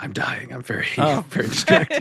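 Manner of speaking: acted dying breath, fake last gasp. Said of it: "with his dying breath".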